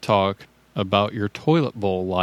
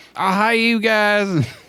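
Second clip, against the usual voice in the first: very high, very bad put-on American accent; 11 semitones higher than usual. Recalling someone who came on and did an impression of an American: bad American impression. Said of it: "did an impression of an American".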